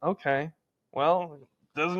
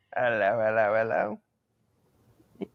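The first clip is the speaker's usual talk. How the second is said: very low bad British accent drifting into Jamaican; 7 semitones lower than usual. Showing how their british accent turns jamaican, british accent turning jamaican. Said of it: "any accent we do, turns into a Jamaican accent ... just like that".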